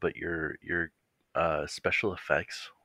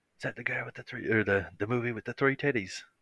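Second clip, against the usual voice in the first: put-on Irish accent, pitched higher; 6 semitones higher than usual. Imagining an actor's reaction to a movie remake: Colin Farrell impression. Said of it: "the best impression I've ever heard".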